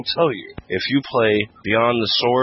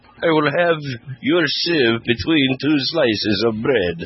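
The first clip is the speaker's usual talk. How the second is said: put-on Russian accent drifting toward Italian; 4 semitones higher than usual. Imagining what the game ai would say to a beaten player, in a russian accent. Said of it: "Again with the Russian accent".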